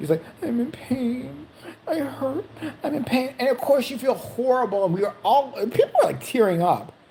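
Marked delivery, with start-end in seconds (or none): 0.4-3.3 soft, drawn-out pained crying. Retelling a man who cried in his chair to skip the line; imitating a man crying. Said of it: "he's crying in his chair".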